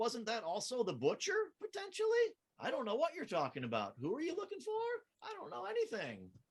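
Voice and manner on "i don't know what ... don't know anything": high, innocent, wide-eyed tone. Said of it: "that whole innocent, wide-eyed look".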